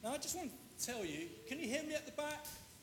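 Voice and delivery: very high, very hushed, soft head-teacher voice. Addressing an audience after putting on her badge, the speaker uses her old head teacher's voice. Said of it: "I've put on my head teacher's voice".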